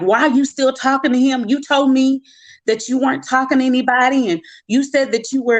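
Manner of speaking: put-on furious, high-pitched angry rant. Retelling a man's message about Father's Day, speaker imitates him going off. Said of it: "He just went off".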